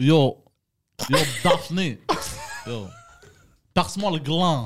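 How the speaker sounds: worst-ever bad put-on Maghrebi accent. Asked to speak with a Maghrebi accent, someone tries it; bad Maghrebi accent. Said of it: "nous parler en maghrébin?".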